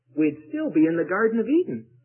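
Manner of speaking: audible stage whisper. Telling how a man at the back of an audience called out, in a stage whisper. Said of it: "said in a stage whisper".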